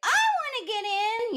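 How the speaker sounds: tiny, very high little voice. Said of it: "with her little voice".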